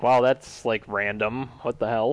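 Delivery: plain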